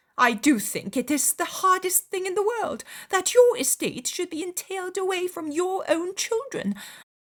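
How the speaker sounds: bitter complaining railing, very high and rising. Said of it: "she continued to rail bitterly".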